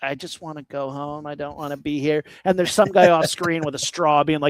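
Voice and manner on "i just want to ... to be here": reluctant, unwilling spider voice. Voicing a movie spider that wants to go home: reluctant spider voice. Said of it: "you can tell this spider's like".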